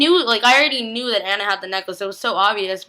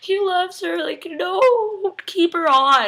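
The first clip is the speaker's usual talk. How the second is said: play-acted, high, tearful bawling with long drawn-out "no"; 7 semitones higher than usual. Recapping an emotional episode, the speaker acts out watching it: retelling own bawling. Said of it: "I was like bawling".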